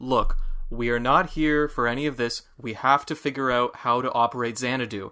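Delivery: plain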